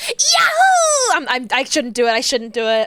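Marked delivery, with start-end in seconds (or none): 0.0-1.1 loud, brash, higher-pitched anime hero voice.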